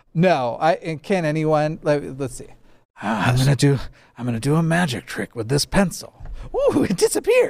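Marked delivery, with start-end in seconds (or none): 3.1-7.5 swooping sing-song villain voice, pitch swinging up and down. Trying the pencil trick line when asked: Heath Ledger Joker voice. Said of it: "Can you do Heath?".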